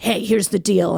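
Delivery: put-on super confident delivery. Retelling how a line to a partner was said: imitating own super confident delivery. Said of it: "I was super confident about it".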